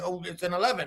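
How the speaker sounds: badly shaken, scared, cornered voice. Retelling how a man rated the food under pressure: imitating a scared man. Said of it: "It's like he got a gun to his head".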